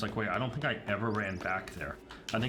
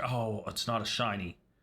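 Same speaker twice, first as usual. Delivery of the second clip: put-on relieved tone. Retelling own reaction to a catch: imitating own relieved tone. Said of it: "if you listen to the tone of my voice".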